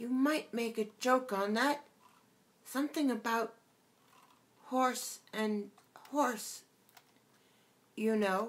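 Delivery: extremely small, tiny, high voice, close by. Reading a story, a voice speaks close to her ear: extremely small voice. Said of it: "an extremely small voice".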